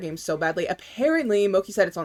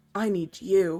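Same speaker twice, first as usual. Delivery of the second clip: mock breathless delivery; 4 dB quieter than usual. Retelling a scene where he answers her: imitating someone breathless.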